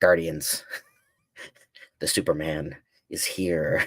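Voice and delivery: cute, put-on little cartoon chipmunk voice. Imagining a squirrel alien reporting to the Guardians: put-on chipmunk voice. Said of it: "you're doing your best chipmunk voice?".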